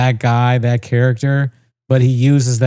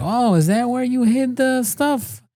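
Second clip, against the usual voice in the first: put-on high, bumbling, dim-sounding old man, Italian accent; 11 semitones higher, 4 dB quieter than usual. Describing a TV cop who plays dumb to outwit criminals, Peter Falk bumbling old Italian voice. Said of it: "he's like this old Italian man".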